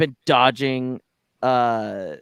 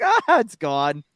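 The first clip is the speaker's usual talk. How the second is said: play-acted breezy, unbothered, offhand, dismissive tone; 3 semitones higher than usual. Retelling how Anakin answers that his ship blew up: imitating Anakin nonchalantly. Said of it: "Just nonchalantly".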